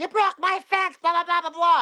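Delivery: high, mock yelling, nagging. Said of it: "starts yelling".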